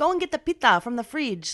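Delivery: put-on Greek accent. Showing how the speaker talks at home with family, greek accent. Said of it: "I do like a more of a Greek accent".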